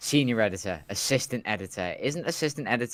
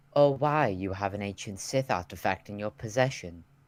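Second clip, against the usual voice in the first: put-on voice neither male nor female. Voicing a character during a scene: put-on androgynous voice. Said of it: "I'll do an, an androgynous voice then".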